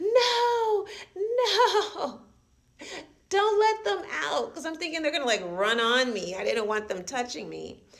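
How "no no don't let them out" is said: very high, very slow, shrill, loud, drawn-out screaming. Retelling leaping onto a bunk bed over cockroaches: retelling a scream.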